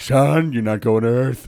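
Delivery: loud cartoon alien dad voice. Recalling a favorite cartoon voice, imitating the alien dad from Fairly OddParents. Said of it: "and I can't do it".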